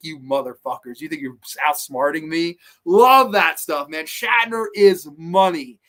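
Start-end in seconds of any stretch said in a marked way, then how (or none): 0.0-2.6 play-acted contemptuous, dismissive, scornful delivery. Quoting an actor's character, imitating William Shatner's disdain. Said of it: "I love his disdain of".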